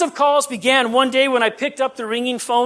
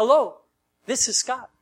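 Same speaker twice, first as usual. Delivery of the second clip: slightly practiced, put-on friendly voice; 3 dB quieter than usual. Retelling a call from an unwanted machine, in a put-on friendly caller voice. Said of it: "I've been practicing that little friendly voice there".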